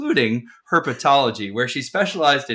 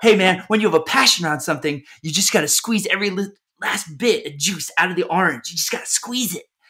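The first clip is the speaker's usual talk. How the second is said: mock manic, amped, excited, pitched-up hype; 6 semitones higher than usual. Quoting Gary Vee on hustle: excited, manic Gary Vee impression. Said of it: "he's real excited and real manic".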